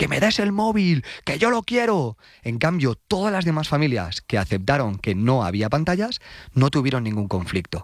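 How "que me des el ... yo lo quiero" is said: put-on high-pitched, demanding yell like a teen. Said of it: "se puso a gritar".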